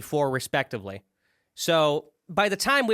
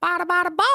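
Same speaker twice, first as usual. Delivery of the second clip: mocking, garbled mumbling, higher pitched; 4 dB louder than usual. Showing the co-host what they sound like, imitating a friend's garbled phrase. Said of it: "you just go".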